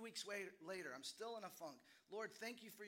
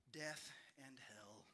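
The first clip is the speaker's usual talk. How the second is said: mock-dejected five-year-old voice, much lower pitched; 6 semitones lower than usual. Retelling a story, the speaker acts out Sammy's answer to his dad, imitating dejected Sammy. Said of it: "looks dejected and looks down and says".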